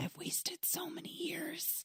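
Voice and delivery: hushed, soft-spoken, slow, very soft whisper. Quoting a movie scene where he speaks to Coach Riley: imitating Emilio Estevez whispering. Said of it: "whispers to Coach Riley".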